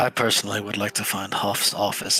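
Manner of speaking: hushed voice, dropped right down. Player character speaking to two companions, lowered voice. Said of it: "I lower my voice for this a lot".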